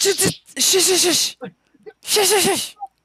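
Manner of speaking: very high, frantic shushing.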